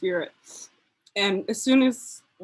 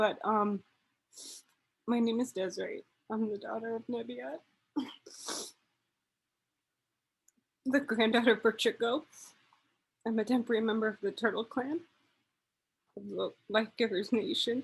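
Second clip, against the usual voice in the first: emotional, teary with joy, much quieter; 8 dB quieter than usual. A speaker introducing herself after getting emotional, through happy tears. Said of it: "you can hear it in my voice, but it's it's happy tears".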